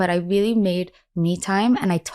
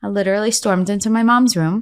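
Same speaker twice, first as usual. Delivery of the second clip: ordinary talk, nothing marked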